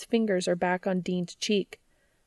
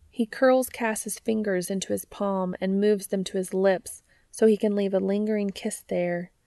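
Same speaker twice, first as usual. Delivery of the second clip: ordinary delivery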